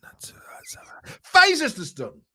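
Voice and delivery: whispered. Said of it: "She talks like this".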